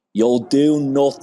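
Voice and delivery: put-on Dublin accent. Co-host retorting in celebration of the Losers Club, in a Dublin accent. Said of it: "I will say it in a Dublin accent".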